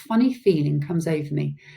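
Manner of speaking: plain reading voice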